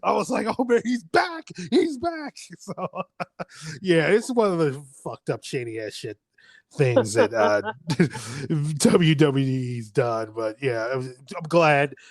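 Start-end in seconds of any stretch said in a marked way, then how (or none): 0.5-2.3 very high, excited yelling and cheering. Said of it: "I was yelling, I was cheering".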